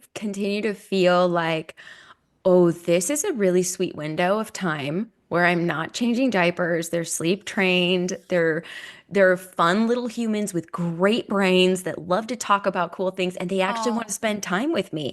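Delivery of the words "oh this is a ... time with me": ordinary talk, nothing marked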